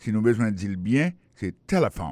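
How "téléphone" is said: téléphone with hard stress on first syllable té. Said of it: "l'accent tonique l'a tombé sous le premier syllabe là".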